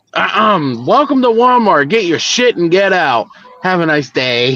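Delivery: mock grumpy, crabby old-man voice. Retelling a bit where Walter is asked his Walmart greeter line: imitating Walter's grumpy voice. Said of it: "I know is the crabby old guy".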